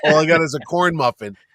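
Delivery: ordinary delivery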